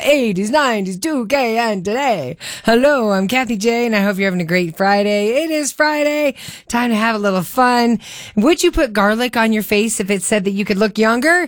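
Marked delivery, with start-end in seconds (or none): 0.0-2.4 creepy, spooky horror-film vampire voice. Radio host on air, slipping into a Count Dracula voice. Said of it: "Now I sound like Count Dracula".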